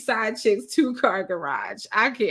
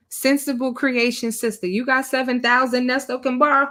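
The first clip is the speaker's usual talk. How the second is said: ordinary talk, nothing marked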